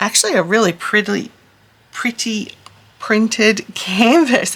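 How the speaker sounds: deliberate, unhurried, slow, careful enunciation. Describing the printed canvas as the tongue gets tied: said slowly. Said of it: "I had to say that slowly".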